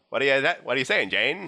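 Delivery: put-on mid-Atlantic accent. Role-playing a scene, asking a character called Jane what she's saying, mid-Atlantic accent. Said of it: "Half of everyone is going to be speaking the mid-Atlantic accent".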